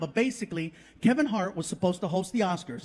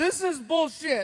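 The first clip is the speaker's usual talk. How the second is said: high, fed-up, annoyed and angry tone; 7 semitones higher than usual. Retelling what an angry passenger said in the car, acting out someone pissed off. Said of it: "He's pissed".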